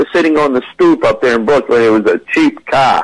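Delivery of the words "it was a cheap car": Boston accent, slower. Showing how a Brooklyn speaker would put it, in a Boston accent. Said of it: "That was a Boston accent".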